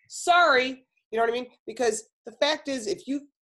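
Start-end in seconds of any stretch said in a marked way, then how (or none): 0.1-0.8 firm, self-assured, confident delivery. Advising against meek apologizing, showing a confident sorry. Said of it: "say it with confidence".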